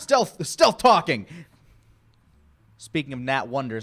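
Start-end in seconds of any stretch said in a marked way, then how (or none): 0.0-1.3 loud, swooping, playful joke yell. Joking about stealth talking while acting casually: mock yelling. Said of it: "I'm yelling now".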